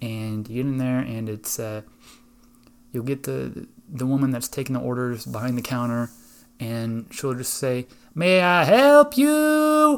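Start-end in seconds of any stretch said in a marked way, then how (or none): 8.1-10.0 very high, very loud, shrill, very slow, drawn-out. Retelling a barbecue restaurant visit, imitating the woman taking orders. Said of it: "That's exactly how she sounds".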